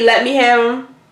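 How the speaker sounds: ordinary delivery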